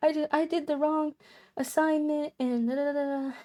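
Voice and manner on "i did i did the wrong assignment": tearful words spoken while crying. Retelling what was said to a professor in the hallway: imitating own past crying. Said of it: "I'm, like, crying".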